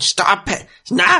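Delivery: very high, upset, distressed outburst. Narrating a scene to two players, voicing Marsh, distressed. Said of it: "Marsh seems distressed by what's just happened".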